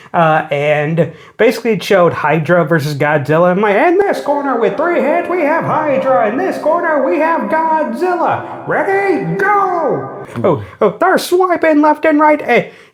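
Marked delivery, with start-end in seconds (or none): 3.7-10.2 put-on very high, drawn-out old-school fight announcer call. Describing hydra versus godzilla as a fight: old-school announcer voice. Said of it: "them old school announcers".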